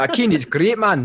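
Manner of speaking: put-on Scottish accent. Joking about a bearing lubricant, the speaker puts on a scottish accent impression. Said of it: "That was my Scottish impression".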